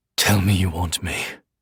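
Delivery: very low, rough, desire-thick voice. Narrator voices the male lover's line in an erotic scene; rough with desire. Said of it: "His voice is rough with desire".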